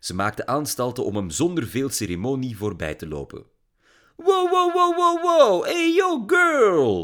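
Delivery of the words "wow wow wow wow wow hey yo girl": very high, loud, stretched-out exclaiming. A father, busy cooking, calls out to his daughter as she comes in, exclaiming. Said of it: "riep haar kokkerellende vader uit".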